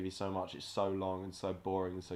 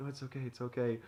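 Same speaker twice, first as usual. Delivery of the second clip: mock tearful, high, falling-apart voice; 5 semitones higher than usual. Retelling a funny bit where a character cries, imitating someone breaking down. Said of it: "He's like breaking down".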